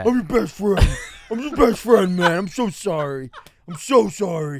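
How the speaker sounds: put-on drunken voice. Retelling a friend apologizing later after drinking: imitating Hogan drunk and apologetic. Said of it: "then he'd get drunk and be like".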